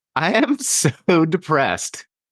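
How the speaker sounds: very high, forceful, intense all-out delivery. Podcast host demonstrates an exercise for listeners, saying it intense while smiling. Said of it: "say with as much intensity as you can muster".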